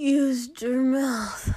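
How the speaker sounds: slurred, dazed mumble, words running together. A character answers another man's coaxing questions in a story, slurred. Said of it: "Shoto slurred".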